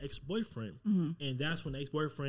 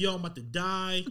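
mock slow, tearful sobbing; 3 semitones higher than usual. Retelling being told of a diagnosis at the doctor: retelling own crying. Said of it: "And I started crying".

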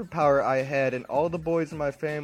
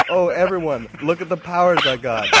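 proud, boastful, showing-off tone; 3 semitones higher, 8 dB louder than usual. Retelling walking around the house showing off: imitating own proud boast. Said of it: "I was walking around the house all proud".

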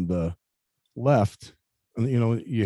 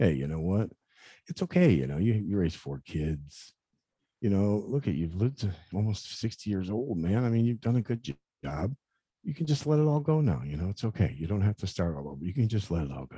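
acted, calm, soothing, calming voice; 5 dB quieter than usual. Recalling the voice in their head as they grew sadder, retelling a calm, soothing voice. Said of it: "this very calming voice".

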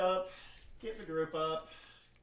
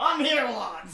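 very loud, pitched-up put-on dwarf voice; 7 semitones higher, 11 dB louder than usual. Acting out a dwarven artificer bursting through the door: voicing a dwarven artificer. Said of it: "this dwarven artificer just come bursting through the door".

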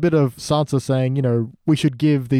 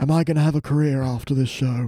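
put-on northern voice, fading away. Keeping up a character impression while it slips: slipping Jon Snow voice. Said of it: "I can't maintain it".

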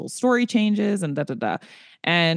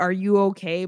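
put-on wheezing laugh through the words; 2 semitones higher than usual. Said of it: "But I'm, like, wheezing".

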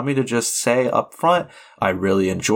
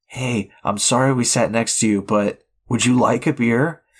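imitated whispered voice. Retelling how a stranger at the movies leaned over: imitating a whisper. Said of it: "leaned over to me and, and whispered".

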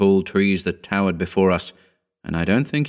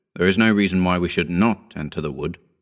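ordinary delivery

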